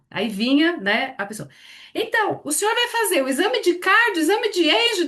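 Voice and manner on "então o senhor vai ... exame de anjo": put-on shrill, very high calling-out shout. Retelling how the attendant announced a patient's exam: imitating someone shouting.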